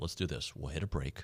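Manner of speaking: whispered voice. Radio host about to go to a break, whispering. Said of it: "Why am I whispering".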